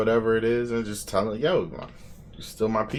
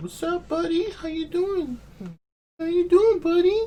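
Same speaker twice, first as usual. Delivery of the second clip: mock baby talk, higher pitch. Acting out a guy talking to his friends in baby talk: imitating baby talk. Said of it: "talking to homies like that".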